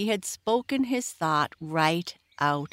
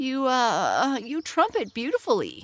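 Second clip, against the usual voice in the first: stammering, higher pitch, slower; 7 semitones higher than usual. Disappointed Buster Bumblebee compliments the trumpeter; stammering. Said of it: "he stammered".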